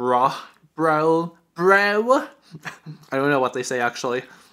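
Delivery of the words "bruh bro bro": bro voice. Wondering how straight guys pronounce it, imitating straight guys saying bro. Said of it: "Is that how straight guys pronounce it?".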